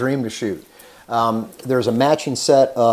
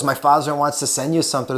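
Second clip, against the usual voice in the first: put-on speaking with a German accent; 7 semitones higher than usual. Quoting what Axel told the speaker one day, in Axel's German accent. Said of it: "with his German accent".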